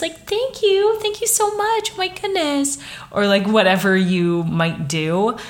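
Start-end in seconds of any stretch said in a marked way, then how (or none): 0.0-2.8 small, little polite voice, much higher pitched. Showing the voice many women use when ordering things, a little polite voice. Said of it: "it's like this little like polite voice".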